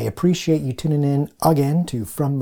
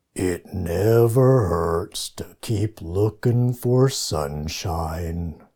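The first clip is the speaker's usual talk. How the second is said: very low, gloomy, glum donkey voice; 7 semitones lower than usual. Quoting Eeyore from Winnie the Pooh for listeners, trying to do Eeyore's voice. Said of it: "you get to hear me try to do the voices".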